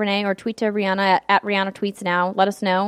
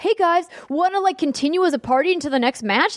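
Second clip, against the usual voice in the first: put-on eager, childish kid voice, pitched up; 8 semitones higher than usual. Retelling what a child teammate kept saying: imitating a child player. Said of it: "And then he was like".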